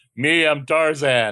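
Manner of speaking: high-pitched, dim, simple-minded jungle-man voice. Imagining a comic scene aloud, speaking as Tarzan: Tarzan voice. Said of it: "Can you imagine Tarzan be like".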